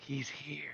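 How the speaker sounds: quiet whisper. Telling teammates a secret in character during a game: whispering. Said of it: "I'm gonna whisper to Darby and Sentinel".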